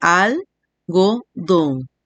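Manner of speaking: slowly spoken, syllable by syllable. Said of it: "lleva tres sílabas".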